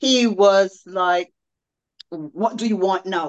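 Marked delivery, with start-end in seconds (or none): 2.1-3.3 acted, confrontational, combative, very aggressive delivery. Retelling what he snapped back when asked a question, mock-aggressive tone. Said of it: "In this very aggressive".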